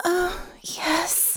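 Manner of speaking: very high, soft, airy, breathed voice. [name] answers Natasha's question, breathed. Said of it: "[name] breathed".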